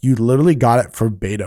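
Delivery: plain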